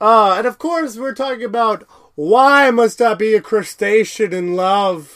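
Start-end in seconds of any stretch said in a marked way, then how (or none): 2.1-5.2 put-on old shopkeeper-type man voice. Speaker names the episode being discussed, Zoidberg voice.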